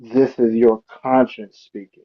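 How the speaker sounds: put-on creepy voice. In a role-playing game, speaking as the player's conscience, real creepy voice. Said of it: "I'm gonna say it in a real creepy voice".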